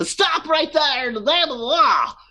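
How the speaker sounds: very high-pitched nerdy, dorky guard voice. Voicing a guard who shouts at a fleeing figure: dorky sounding guard voice. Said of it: "the very dorky sounding guard goes".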